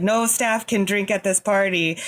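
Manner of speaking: ordinary talk, nothing marked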